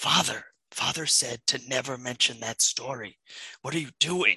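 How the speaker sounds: muttered under breath. Telling a campfire story, voicing young Micah warning Amphis: said under her breath. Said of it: "under her breath, she says that".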